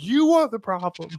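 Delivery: mock very high, piercing, shrill yell. Retelling a movie scene where the character yells at the kids: imitating Ben Stiller yelling. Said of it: "starts yelling at the kids".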